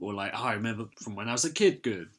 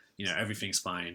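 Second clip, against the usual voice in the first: put-on smug voice, lower and quieter; 4 semitones lower, 6 dB quieter than usual. Retelling a film scene where Kurt opens the door: smug Kurt impression. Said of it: "Kurt just opens the door, like, smug".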